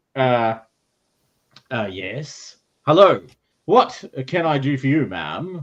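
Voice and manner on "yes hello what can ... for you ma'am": slow, proper captain-like voice, less like a pirate. Storyteller voices the man opening the door to a woman, captain voice. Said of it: "He's using a different voice now".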